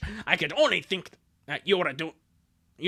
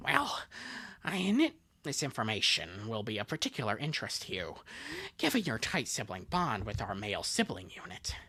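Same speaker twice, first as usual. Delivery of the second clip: put-on voice, very low and swooping; 7 semitones lower, 8 dB quieter than usual. Voicing a character in a scene, in a Joker voice. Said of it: "I have to do the Joker voice".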